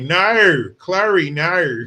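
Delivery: teasing put-on Australian accent, loud and high. Mother quoting a line she and her daughter say to mock the characters' accent. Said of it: "we always make fun of their accent".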